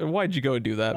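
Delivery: normal talking voice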